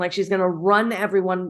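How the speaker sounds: usual speaking voice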